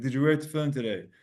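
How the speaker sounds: put-on British accent. Retelling what a man on a plane asked passengers: imitating a British accent. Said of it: "with a British accent".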